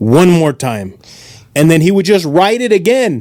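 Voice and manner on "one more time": put-on thick, heavy Russian accent. Retelling what the Russian statistics teacher asked: imitating a thick Russian accent. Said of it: "he would explain in a thick accent".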